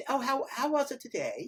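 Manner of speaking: put-on English accent. Demonstrating how an English accent sounds on a phone call, put-on English accent. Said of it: "I'm going to just use the English accent".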